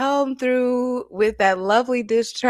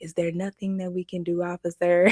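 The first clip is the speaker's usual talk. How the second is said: earnest, worried, concerned pleading tone; 4 semitones lower, 6 dB quieter than usual. Retelling how a father pleaded with an officer: imitating T.I. as a concerned parent. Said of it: "he just coming like the most concerned parent".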